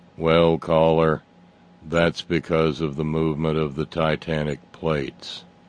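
flat, level, one-note monotone delivery. Retelling how Steve answered a caller's question, Steve's flat monotone. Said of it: "in one of the world's greatest monotones".

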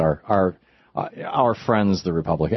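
ordinary talk, nothing marked

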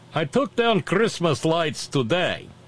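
cheesy put-on Russian accent. Speaker reads out what someone typed in chat, bad Russian accent. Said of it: "in my bad Russian accent".

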